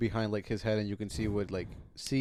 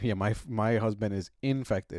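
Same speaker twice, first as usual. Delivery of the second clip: plain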